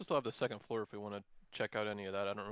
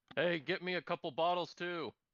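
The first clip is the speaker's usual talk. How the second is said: high, raised, loud shout; 7 semitones higher than usual. A player's character calls up to another character, shouting. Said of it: "I'm just gonna shout".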